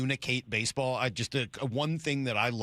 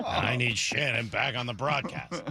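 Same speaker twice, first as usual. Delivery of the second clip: mock gloomy, depressed tone. Reading out a listener's message as the listener: imitating Anthony sounding depressed. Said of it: "He sounds depressed".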